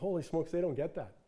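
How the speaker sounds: plain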